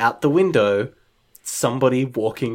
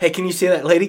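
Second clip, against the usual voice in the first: put-on panicking voice, higher pitch; 5 semitones higher than usual. Retelling a film scene where a character panics at a woman: imitating Jeff freaking out. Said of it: "Jeff kind of starts to freak out and is like".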